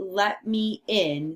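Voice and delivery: ordinary talk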